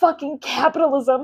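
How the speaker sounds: very loud emotional outburst. Voicing what they think on the inside, the speaker breaks into an emotional outburst. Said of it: "I didn't expect to get that emotional".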